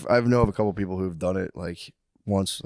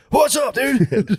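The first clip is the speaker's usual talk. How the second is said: very high, loud, rhythmic calling voice; 8 dB louder than usual. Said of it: "the cadence he talks".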